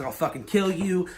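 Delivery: ordinary delivery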